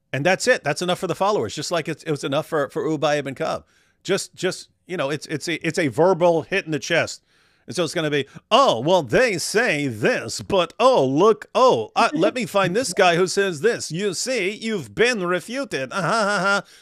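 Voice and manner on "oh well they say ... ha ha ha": mock patronizing, slow, self-assured condescending tone. Imitating how Fareed will respond, in a mock confident, condescending tone. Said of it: "speak in an incredibly confident and condescending tone".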